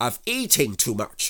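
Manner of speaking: severe, stern delivery. Rabbit answers Pooh, who is stuck in the doorway; stern. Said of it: "said Rabbit sternly".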